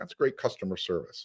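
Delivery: breathy sarcasm laid on thick. Complaining about a rental car company's poor service: sarcastic. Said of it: "I hope you can sense the sarcasm".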